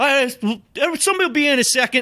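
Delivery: put-on thick Boston accent, yelled very high. Retelling how he answered when you came in for class, imitating a thick Boston accent, like yelling. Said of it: "like the thick accent".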